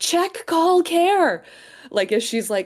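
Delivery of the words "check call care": high, loud yelled delivery. Voicing a character who yells from the computer: character yelling. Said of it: "Nessie yelling from the computer".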